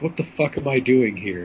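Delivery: plain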